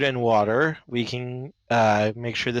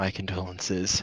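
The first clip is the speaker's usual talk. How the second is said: hushed, soft half-whispered aside; 5 semitones lower, 7 dB quieter than usual. Voicing a character who half-whispers condolences to Anivia: half-whispering in character. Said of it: "I'm going to whisper to Anivia".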